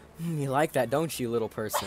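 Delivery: put-on, very quiet voice. Retelling what Kiddo said into his camera: imitating Kiddo speaking very quietly. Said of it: "saying very quietly".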